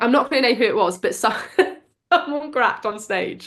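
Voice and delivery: giggly, speaking through laughter. Speaker telling a story to a co-host, laughing while talking. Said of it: "sorry, I'm literally laughing so much now".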